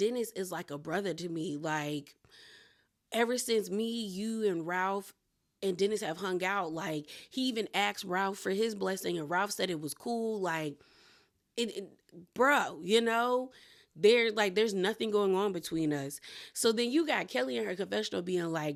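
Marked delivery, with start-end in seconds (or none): none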